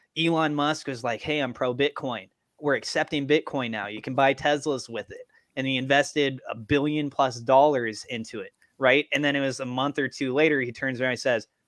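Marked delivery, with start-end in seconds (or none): none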